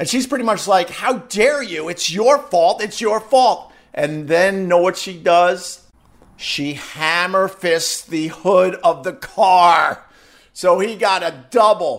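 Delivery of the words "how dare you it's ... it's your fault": put-on woman's yelling voice, pitched up, blaming. Retelling what a woman on the sidewalk yelled: imitating a woman yelling. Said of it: "She was yelling at him".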